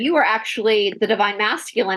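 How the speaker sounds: normal talking voice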